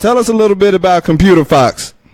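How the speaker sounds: loud yelling right into the mic. Interviewer repeating the question to someone who can barely hear, yelling. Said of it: "I'm yelling all in your face right now".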